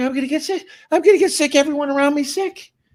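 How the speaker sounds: put-on very high, fast, frantic, panicky child's babble. A parent retells their sick daughter's earlier words; imitating panicking daughter. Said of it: "she was panicking. She's like".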